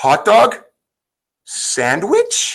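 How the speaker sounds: dog and sandwich each with rising question intonation. On a podcast, making the question mark audible: question rise on 'dog' and 'sandwich'. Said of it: "you're going to have to get my tone of voice that there's a question mark at the end".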